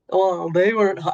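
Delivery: put-on creepy voice. Imitating him judging the speakers' looks: creepy Trump voice. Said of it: "you could hear his creepy voice being like".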